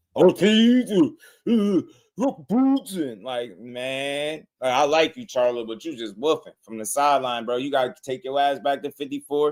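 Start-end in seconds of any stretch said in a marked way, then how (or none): 0.2-3.3 put-on very slow, slurred, acted drunken speech. Mocking a fighter who sounds drunk: imitating Charlo slurring drunk. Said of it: "but he's slurring".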